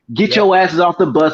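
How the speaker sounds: mock drill sergeant yelling. Retelling drill sergeants boarding the bus: imitating drill sergeants yelling. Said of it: "drill sergeants get on the bus just yelling".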